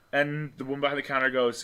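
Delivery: normal talking voice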